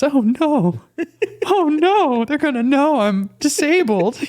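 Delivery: very high, slow, drawn-out anime voice. Voicing the third grader inside the speaker, in anime voice. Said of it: "like like anime voice".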